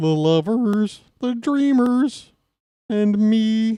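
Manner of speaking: very high pitch, slow pace. Breaking from the game call to joke: Kermit the Frog voice. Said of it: "my Kermit the Frog impression".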